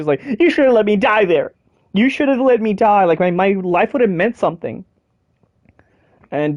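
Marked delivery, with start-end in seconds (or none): 0.4-4.8 tearful, crying, pleading voice. Retelling a game scene where she is crying: imitating someone crying. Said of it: "and she's crying".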